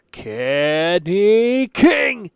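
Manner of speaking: drawn out slow and loud, each syllable yelled.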